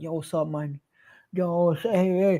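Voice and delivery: mock spaced-out babble. Retelling calling out to nurses while on ketamine in hospital: imitating himself drugged and out of it. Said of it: "I was out of it".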